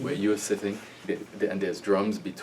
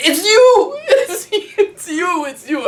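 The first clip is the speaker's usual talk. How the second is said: put-on very high, slow crying through tears; 15 dB louder than usual. Retelling recognizing a man from a dream, retelling crying through tears. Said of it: "tears running down my face".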